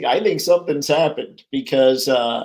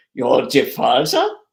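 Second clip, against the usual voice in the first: sudden, put-on German accent. Reacting to a chat message, put-on German accent. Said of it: "I don't know why I went German there".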